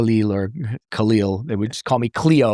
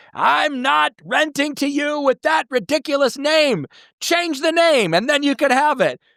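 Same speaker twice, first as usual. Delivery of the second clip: mock screaming tirade, very high pitched. Retelling how the landlord stood on his chair: imitating a landlord screaming. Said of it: "screamed at me".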